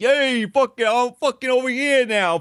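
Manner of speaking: very high, loud, shrill put-on Bronx accent. Complaining about people who pretend to be from the Bronx, fake New York accent. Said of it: "fake New York accents".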